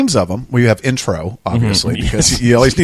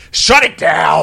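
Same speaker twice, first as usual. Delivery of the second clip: rough, high-pitched voice; 5 semitones higher than usual. Talking about the reality show Bar Rescue and imitating its host: Jon Taffer impression. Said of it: "John Tapper".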